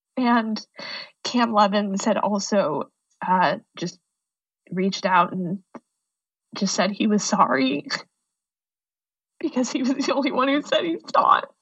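fighting tears, on the verge of crying. Recalling a teammate who reached out to apologize; holding back tears. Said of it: "I don't want to cry".

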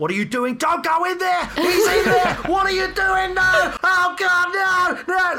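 very high, frantic, shrill, rising, horrified screaming. Speaker re-enacts a man yelling at characters in a horror film: retelling screaming. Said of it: "he's just like screaming".

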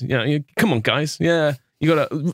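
plummy, posh ex-army public schoolboy voice. Describing the man who ran a residential course, imitating how he talks. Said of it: "He sort of talks like this".

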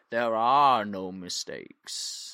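put-on wise old tortoise voice. Retelling a film scene in the voice of Master Oogway. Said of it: "quite a good Master Oogway impression".

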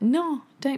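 mock startled, slightly irritated, loud, high. Retelling own reply to a lady lowering the umbrella: imitating own shocked, annoyed reply. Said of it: "shocked, slightly pissed off".

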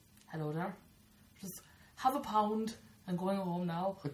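put-on Irish accent. Taking turns trying different accents, the speaker does an Irish accent.

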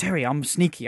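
slight put-on New Zealand accent. Praising a show with Picasso-style paintings, you quote Quiet Coyote in a little Kiwi accent. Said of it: "with a little Kiwi accent".

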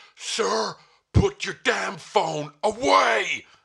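put-on very slow, gruff, rough, barked cop voice. Retelling an airport queue, a cop with a gun ordering: imitating an armed cop ordering. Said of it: "this cop with a gun just went".

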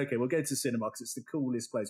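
ordinary talk

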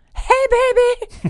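blurted very high, frantic, sexy voice. The speaker performs a greeting in a character voice: frantic, sexy Barney voice. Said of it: "That's a really frantic, sexy Barney".

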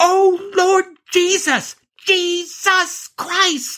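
very high, stretched-out, drawn-out screaming cries. Recalling people riding down the mountain, retelling people screaming. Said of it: "they are screaming".

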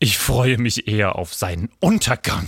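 scornful sneer. A schoolboy answers a house-elf about his classmate, sneering. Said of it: "höhnte Draco".

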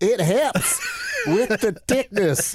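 very high, lilting, sing-song Southern gal voice. Retelling a cooking contest, imitating a Southern woman. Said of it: "this poor Southern gal goes".

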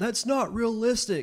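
mock very high shouting. Recounting a moment in a movie theater when a guy yells at a trailer, retelling a guy yelling out. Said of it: "this guy yells out".

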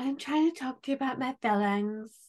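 mocking, babyish put-on baby-talk voice. Mocking someone's way of talking in a baby voice: imitating a baby voice. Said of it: "baby voice".

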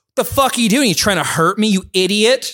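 play-acted furious, high, confrontational yell. Retelling how the speaker's mom confronted a man who hit her car, retelling mom's yell. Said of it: "the guy that she was yelling at".

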